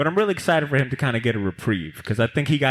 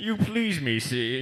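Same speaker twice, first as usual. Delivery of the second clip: put-on supervillain voice, higher and quieter; 3 semitones higher, 5 dB quieter than usual. Joking to another speaker who called them up on the dais: Bane voice. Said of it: "You sound like Bane".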